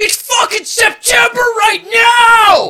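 put-on very loud, high, shrill drunken holler. Retelling a moment at a show, yelling into the crowd: imitating own drunken yell.

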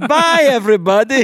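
very high-pitched, very loud, belted-out voice. Retelling Doctor Nick being gored by glass: Doctor Nick voice. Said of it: "And he goes".

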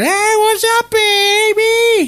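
tiny, very high, very slow puppet voice. Speaker voicing a puppet that makes fun of him, in a little tiny puppet voice. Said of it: "He has this little tiny voice".

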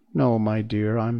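ordinary delivery

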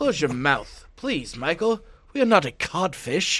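put-on English accent. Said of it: "it's even got an English accent".

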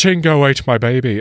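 Australian-Irish accent. Asked to try an accent, speaker tests a line in an Australian-Irish accent. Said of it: "Australian-Irish accent".

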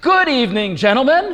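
incredibly loud, very high, echoing, booming voice. Retelling a woman speaking for the first time in 17 years: incredibly loud voice. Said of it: "she speaks in an incredibly loud voice that is echoing".

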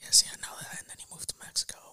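soft, hushed whisper. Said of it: "I don't know why we're speaking so low".

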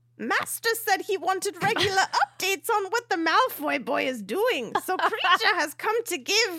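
very high, squeaky, elf-like voice. Playing the house-elf arriving to give the master an update, in a Dobby voice. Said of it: "And then you went Dobby voice".

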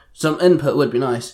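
ordinary delivery

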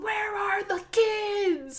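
shrill, very high, very slow scream. Retelling a drag queen's Nancy Grace impression: imitating Nancy Grace screaming. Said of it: "banging on the table and screaming".

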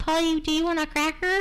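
bird-like talking voice. Recounting someone else's parrot impression, doing a parrot impression. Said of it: "Addie's was".

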